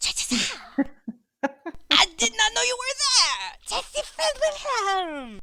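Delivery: very high-pitched, loud creature voice. Playing Paco reacting as a friend reveals himself, loud Paco voice.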